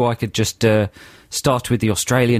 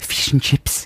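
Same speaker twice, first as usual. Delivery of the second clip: put-on New Zealand accent; 2 semitones higher than usual. Asked by the other speaker to say a phrase in a new zealand accent, attempted new zealand accent. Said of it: "give me the word fish and chips in New Zealand".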